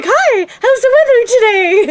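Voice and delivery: put-on bright, breezy, chipper high-pitched voice. Retelling walking out of isolation past the others, retelling a cheerful hello. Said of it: "I'd be like".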